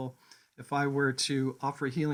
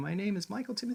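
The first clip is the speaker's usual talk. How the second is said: rising pitch lilt through a spoken name; 6 semitones higher, 3 dB quieter than usual. Explaining how people say their own names, demonstrating a rising upward inflection. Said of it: "saying it with like an inflection in the upward".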